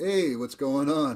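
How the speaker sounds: New York man character voice. Telling a joke, quoting a New York man: voicing a New York man. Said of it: "The New York man says".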